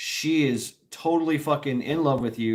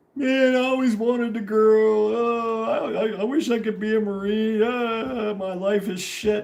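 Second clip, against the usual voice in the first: put-on very high, slow, drawn-out drunken crying; 10 semitones higher, 3 dB louder than usual. Retelling what a drunk, crying man said: imitating a crying drunk. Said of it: "now he's the crying drunk".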